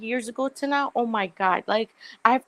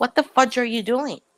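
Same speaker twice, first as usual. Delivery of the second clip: put-on angry, scolding yell. Retelling a doctor scolding the speaker: imitating doctor yelling. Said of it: "she swore at me".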